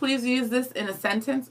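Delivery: ordinary delivery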